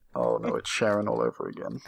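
very soft, dismayed half-whisper. Playing a character who stops dead, face in hands: half-whispering in dismay. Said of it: "slowly put my face in my hands and whisper".

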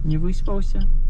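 put-on high, soothing, sing-song baby talk.

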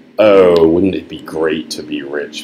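ordinary delivery

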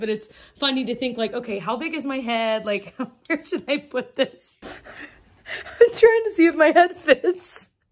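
giggling while talking. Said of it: "I'm giggling so hard".

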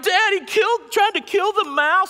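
very high, very loud, shrill, tearful crying wail. Retelling how the son ran to his wife: imitating Cameron crying. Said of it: "runs into my wife crying".

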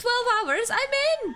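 high, excited yell.

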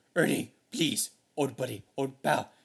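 loud puppet monster voice. Repeating a line from the story: Cookie Monster voice. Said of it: "I can just hear Cookie Monster's voice".

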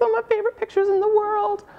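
very high, squeaky put-on voice. Speaker introducing favorite pictures to an audience, in a high-pitched voice. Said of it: "[HIGH PITCHED VOICE]".

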